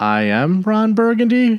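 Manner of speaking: statement with rising question intonation on "Burgundy". Explaining a scene from Anchorman, doing Ron Burgundy's questioning inflection. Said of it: "he kind of did that inflection like".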